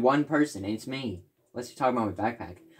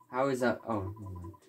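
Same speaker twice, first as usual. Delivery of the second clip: ordinary delivery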